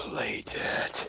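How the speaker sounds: breathy, hushed whisper, barely voiced, very soft. A whisper is heard again in a player character's mouth, whispering. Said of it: "that whisper in your mouth again saying".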